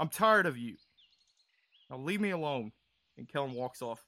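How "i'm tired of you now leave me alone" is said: furious, really mad, angry tone. Playing a character shouting down another in a role-play scene: really mad. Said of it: "he seems really mad".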